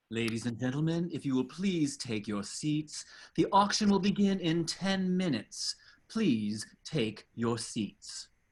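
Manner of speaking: very fancy, elegant announcer voice. In the darkness of a fancy auction house, a voice announces, very fancy voice. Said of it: "we hear a very fancy voice".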